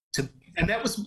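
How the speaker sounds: moved, emotional voice.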